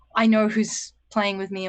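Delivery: plain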